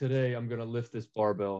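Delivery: put-on flat monotone delivery. Imitating own early videos: imitating own monotone voice. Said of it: "so monotone".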